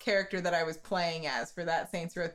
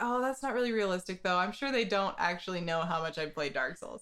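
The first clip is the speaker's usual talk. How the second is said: ordinary delivery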